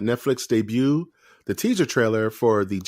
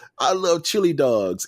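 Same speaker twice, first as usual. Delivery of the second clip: very high-pitched, squeaky put-on voice; 6 semitones higher than usual. Describing how Sonic talks about chili dogs, high-pitched Sonic voice. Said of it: "he has like this real high pitched kind of".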